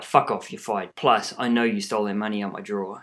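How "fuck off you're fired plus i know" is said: ordinary delivery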